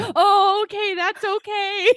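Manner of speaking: acted very high, very drawn-out, slow flustered voice. Retelling his reply after she refuses: imitating a nervous guy. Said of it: "He's so nervous".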